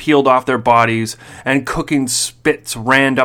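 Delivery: plain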